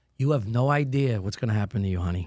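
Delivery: mock-calm, very calm delivery. Retelling what he said to guys riled up by the sink, retelling a calm warning. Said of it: "I said very calmly".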